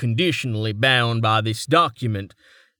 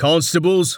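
spoken at a much higher pitch; 6 semitones higher, 3 dB louder than usual. Barstone addresses the constables while watching the waves, in a warning tone. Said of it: "Barstone said warningly".

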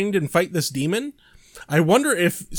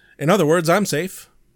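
ordinary talk, nothing marked

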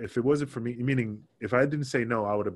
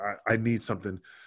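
ordinary delivery

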